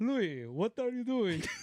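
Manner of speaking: put-on Russian accent. Speaker retells what a russian guy asked him, imitating a russian accent. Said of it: "a Russian guy with a Russian accent".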